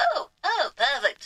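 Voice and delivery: voice cracking. Working out a crafting plan aloud, voice cracking. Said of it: "Not sure why my voice cracked there".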